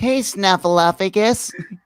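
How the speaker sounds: big feathered cartoon puppet bird character voice. Joking about Sesame Street, imitating Big Bird calling Snuffleupagus: Big Bird voice. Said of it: "And Big Bird sound like".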